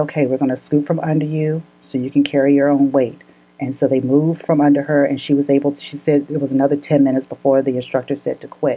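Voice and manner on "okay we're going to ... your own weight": usual speaking voice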